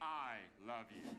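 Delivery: put-on British accent, an octave down, very low. In a self-recorded bit, speaking in a British accent an octave lower. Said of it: "doing a British ac- accent an octave lower".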